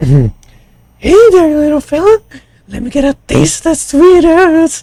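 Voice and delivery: very high voice swooping way up. Doing an impression between reading lines: Mister Herbert impression. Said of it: "Was that a good impression of Mister Herbert?".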